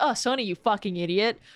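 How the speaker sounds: mocking, teasing scolding tone. Retelling how the friends mocked a missed sword: imitating mocking friends. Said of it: "you guys were like".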